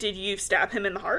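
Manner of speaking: plain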